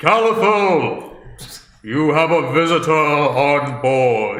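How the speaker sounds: loud, echoing, booming announcer call, stretched out. Voicing a character calling out from the airship: Solomon's booming voice. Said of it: "Solomon's booming voice echoes from the airship".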